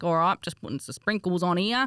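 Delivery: bad, exaggerated put-on Australian accent. Quoting her own first TikTok video, in an exaggerated Australian accent. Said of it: "I probably put a bit more of an Australian accent on".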